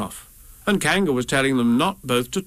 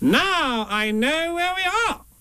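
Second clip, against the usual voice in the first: very high, rising, crowing triumphant call. Rabbit, lost in the mist with Pooh and Piglet, announces: triumphant. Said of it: "Rabbit said triumphantly".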